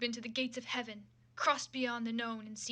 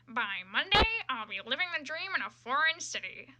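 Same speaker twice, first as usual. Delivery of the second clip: amateur, loud, swooping, nasal cartoon voice; 2 semitones higher, 5 dB louder than usual. Reading a fan story aloud on stream, doing a Squidward impression. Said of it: "said [name], removing his uniform after another brutal 12-hour shift at the [name]. / removing his uniform after another brutal 12-hour shift at the [name]. / snickered [name] nasally, / I'm gonna try".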